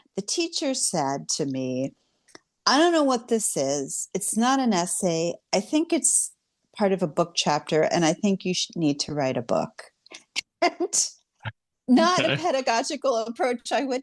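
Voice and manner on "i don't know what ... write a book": usual speaking voice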